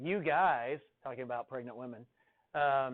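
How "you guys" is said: put-on sarcastic voice. Retelling a husband's joke about pregnant women: imitating Alan's sarcasm. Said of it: "as sarcastically as possible".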